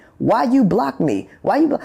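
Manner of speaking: acted-out, half-strength yelling that keeps breaking off. Recounting a caller who screamed at them while they were live, imitating someone screaming. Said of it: "starts screaming and hollering at me".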